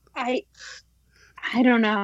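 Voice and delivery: scared, terrified, frightened. Asked for an opinion on Travis Bickle, answering terrified. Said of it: "You sound terrified by the question".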